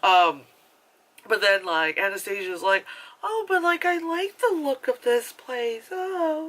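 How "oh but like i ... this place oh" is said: breathy, shy put-on voice, higher. Retelling what Anastasia says about the house: breathy, shy Anastasia voice. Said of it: "breathy and, like, ooh, ever so shy".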